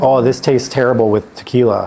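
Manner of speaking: ordinary delivery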